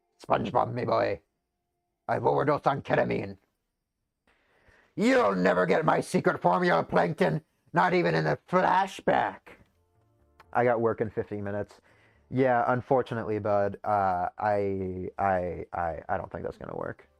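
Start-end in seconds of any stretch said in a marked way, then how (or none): 0.3-9.4 put-on creaky, rough, raised old-grandpa character voice. Joking around while the others listen: Mr. Krabs voice. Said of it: "you sound like the grandpa, Mister Krabs".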